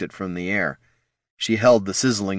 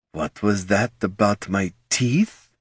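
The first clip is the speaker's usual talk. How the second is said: silky, smooth vampire voice, like wind on silk. Reading a story, a vampire asks a question in a voice like wind on silk. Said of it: "in a voice like wind on silk".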